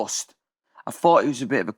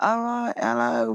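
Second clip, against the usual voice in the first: own British accent, played up and exaggerated; 2 semitones higher than usual. Retelling walking into a radio station: playing up own british accent. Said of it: "fucking with my accent".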